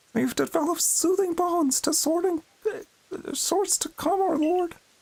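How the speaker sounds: squeaky cartoon voice, pitched very high. Retrying a line after losing the voice, in a Mickey Mouse voice. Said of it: "The Mickey Mouse voice is hard to keep up".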